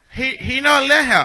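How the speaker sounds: put-on Jamaican accent. Role-playing a phone call asking for Kyrie Johnson, fake Jamaican accent. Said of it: "Is that a Jamaican accent I hear?".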